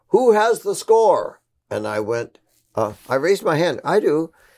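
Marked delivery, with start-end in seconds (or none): 0.1-1.4 very high, loud shout. Retelling a moment at the Philharmonic hall, a man calling out: retelling a yell. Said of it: "this man yells out".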